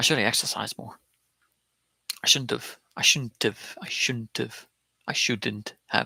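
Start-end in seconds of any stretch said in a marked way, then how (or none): 0.0-1.0 quick, rushed, relaxed everyday speech. Demonstrating for a learner how the phrase sounds in fast casual speech. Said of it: "when we're speaking very quickly, it sounds like".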